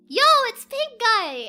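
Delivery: very loud, slow, drawn-out shout. Retelling spotting someone in a pink guy costume: imitating own loud yell. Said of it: "but I yelled it so loudly".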